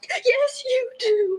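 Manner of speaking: high, tearful, sobbing, insistent crying voice. In a drama, answering a denial just before being told to stop crying, crying. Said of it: "Please stop crying".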